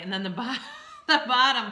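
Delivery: talking through laughter. Reading out tarot cards for the days, laughing while talking. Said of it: "I'm sorry I keep laughing".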